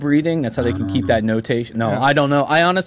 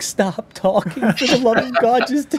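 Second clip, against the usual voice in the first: put-on pleading tone, higher; 10 semitones higher than usual. Retelling pleading with a video of themself talking: imitating own pleading. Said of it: "I'm pleading with a YouTube video".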